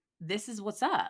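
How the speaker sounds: ordinary delivery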